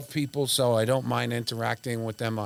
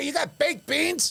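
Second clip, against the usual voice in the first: play-acted raised voice, very high, calling out. Recalling being recognized in a supermarket from radio, retelling a raised voice. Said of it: "if I raised my voice and say".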